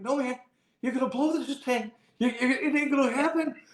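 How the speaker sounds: high, yelled-out, jeering shout. Retelling what was screamed out before a winning putt: retelling own scream. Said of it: "that's what I screamed out".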